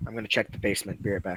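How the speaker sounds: soft, close, hushed whisper in the ear. Leaning in to speak privately into another player's ear, whispering. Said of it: "a whisper in his ear".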